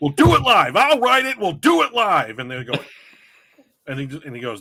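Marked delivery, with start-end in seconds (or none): 0.0-2.4 very loud, very high-pitched, shrill meltdown rant. Retelling a live meltdown over missing cue cards: Bill O'Reilly meltdown impression. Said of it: "he has this meltdown".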